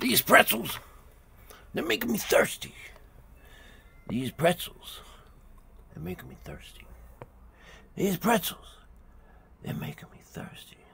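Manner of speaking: put-on New York accent, over and over. Speaker leads listeners in repeating a TV catchphrase: New York accent. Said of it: "Gotta have the New Yorker accent".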